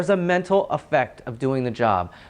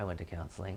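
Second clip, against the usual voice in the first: very quiet, low, hushed, self-assured whisper; 9 semitones lower, 18 dB quieter than usual. Retelling someone who came up after a talk to police officers: imitating a quiet, confident voice. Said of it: "quietly but confidently was like".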